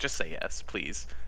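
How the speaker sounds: very quiet, hushed whisper. Leaning in to the leader in character, urging a yes: speaking very quietly. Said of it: "very quietly".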